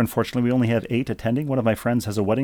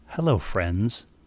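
put-on broadcaster voice, lower; 3 semitones lower than usual. Answering a request to read viewer mail slowly: Jim Nantz voice. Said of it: "Can you read this one slowly in your Jim, Jim Nantz voice?".

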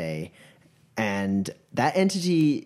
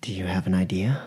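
very quiet, lower murmur under the breath; 5 semitones lower than usual. Voicing a character looking out a broken window, under the breath. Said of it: "Under my breath. Very, very quiet".

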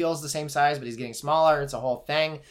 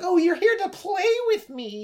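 odd little very high squeaky voice. Describing a scene, the speaker acts out the imaginary friend's line: weird squeaky voice. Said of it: "a weird squeaky voice".

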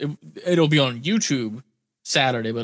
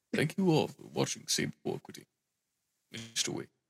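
whispered, hushed, breathy put-on actor voice, barely voiced; 3 semitones higher, 9 dB quieter than usual. Speaker switching to a Lance Reddick voice for the rest of the podcast. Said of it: "I'm going to do the rest of this podcast in my Lance Reddick voice".

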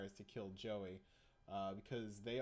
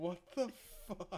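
mock, high-pitched shrieking scream; 8 semitones higher, 3 dB louder than usual. Retelling a scene full of vampires: imitating Joey screaming. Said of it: "He's just screaming".

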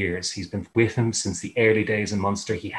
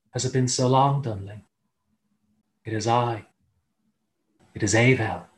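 softly whispering. Voicing a banshee calling a warrior by name from the dark: softly whispering. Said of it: "the voice softly whispers".

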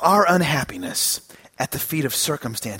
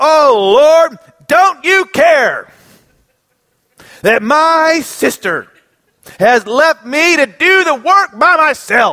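mock grumpy, irritated grumbling, very drawn-out; 8 semitones higher, 5 dB louder than usual. Retelling how the gospel's Martha complains to Jesus: imitating irritated, grumpy Martha. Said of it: "Martha gets real irritated, grumpy".

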